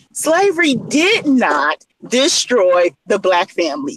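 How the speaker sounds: very slow, deliberate, drawn out word by word. The speaker repeats a point for listeners, saying it real slow. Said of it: "I'm going to say it real slow for you".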